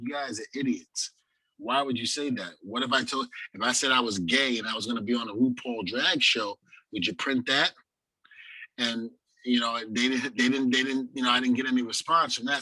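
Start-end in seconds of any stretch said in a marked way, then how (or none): none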